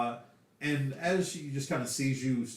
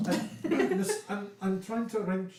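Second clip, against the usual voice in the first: put-on Scottish accent, high; 8 semitones higher than usual. In a role-play scene, a character answers an invitation in a higher Scottish accent. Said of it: "a certain Scottish accent".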